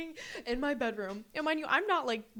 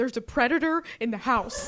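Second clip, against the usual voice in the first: loud, urgent, alarmed yelling; 7 dB louder than usual. Retelling waking the roommates about a frog: imitating her own yelling. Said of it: "I remember just yelling".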